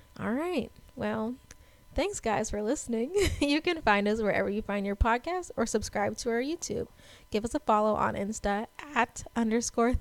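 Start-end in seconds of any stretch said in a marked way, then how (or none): 7.3-10.0 voice cracking and breaking mid-phrase. Podcast host signing off to listeners, voice cracking. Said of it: "My voice broke. Like a 12-year-old boy".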